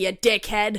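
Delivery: put-on Boston accent. Recalling what she said when her grandpa taught her to drive: boston accent. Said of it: "I got my Boston accent when Papa taught me how to drive".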